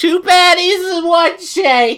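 shrill, very high, loud shouting. Retelling how the guy at Five Guys called out the order, retelling a yell. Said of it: "And then he yells".

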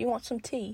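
very soft, hushed put-on British accent. Imagining a British man and trying out the accent, in a mock British accent. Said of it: "how do I make the accent?".

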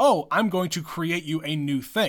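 plain

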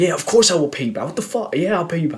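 aggressive tone. Retelling a reply from a stranger sharing an Uber: imitating someone getting aggressive. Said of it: "he got a bit aggressive".

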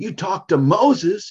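shrill, very high-pitched, loud yell. Retelling calling out to god, retelling own yelling. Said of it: "clearly yelled out".

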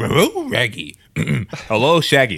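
slow, drawn-out cartoon dog voice with swooping pitch. Doing a quick voice bit while chatting: Scooby-Doo voice. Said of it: "that was a great Scooby".

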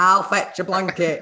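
put-on Hull accent. Recalling the line they had at age five, strong Hull accent. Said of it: "probably in a really Hull accent".

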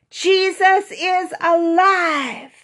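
very loud, very high cheer, "alive" stretched out. Leading listeners in saying the message together: shouting the message. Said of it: "Let's shout the message with me".

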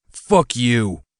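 quiet, held-back snarling. Narrating Clyde's retort as rage fills him, snarled, not even a shout. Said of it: "he snarled, his voice not even a shout".

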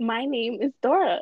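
put-on Spanish-tinged accent. Trying the line after being asked to do it: Dora's accent. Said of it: "just say that with an accent".

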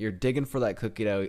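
ordinary delivery

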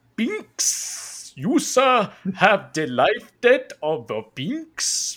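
high, loud, very slow booming voice. Retelling a scene, doing a favorite impression: Boss Nass impression. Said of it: "And he's just like".

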